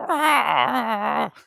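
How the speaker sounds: very high, squealed-out scream. Imitating Yoda screaming after mentioning Lego games: Yoda screaming impression. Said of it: "What an outstanding impression".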